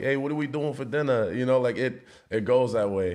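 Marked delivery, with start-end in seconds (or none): 0.0-1.3 New York accent fully coming out, thick. Showing how the accent comes out when back in New York, do a New York accent. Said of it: "when I'm in New York, it's all coming out".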